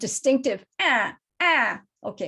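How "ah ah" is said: loud caw like a fish crow. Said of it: "that's a fish crow".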